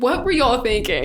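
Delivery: normal talking voice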